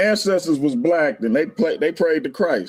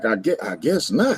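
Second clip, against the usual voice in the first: play-acted unsure, stumbling, halting delivery; 5 semitones lower than usual. Retelling a brother's answer to a question: imitating Hercules hesitantly. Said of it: "He said it kinda hesitantly".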